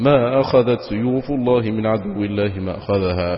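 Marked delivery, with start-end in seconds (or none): none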